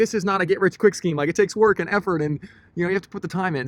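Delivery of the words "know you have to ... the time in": ordinary talk, nothing marked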